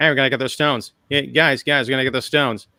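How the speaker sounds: fast-talking, quippy, quick wisecracking delivery. Showing the only version of the character's voice heard in the series, a fast-talking, quippy Tony Stark voice. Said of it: "the kind of like the fast talking".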